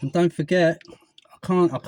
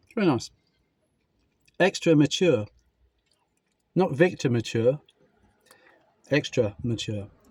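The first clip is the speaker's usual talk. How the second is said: talking with mouth full, chewing. Speaker eating cheese on camera, talking with mouth full. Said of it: "it's rude to speak with your mouth full".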